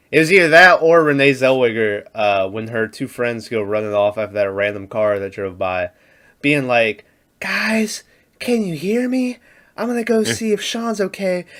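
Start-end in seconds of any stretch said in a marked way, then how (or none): 7.3-11.3 soft, high-pitched half-whisper. Retelling a movie scene where friends run off: imitating Renee Zellweger half-whispering. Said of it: "why would you whisper".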